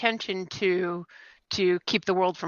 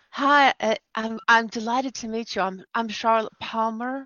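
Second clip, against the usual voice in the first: put-on feminine voice; 3 semitones higher than usual. In character, introducing herself to a man who extended his hand, very feminine voice. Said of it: "in a very feminine fashion".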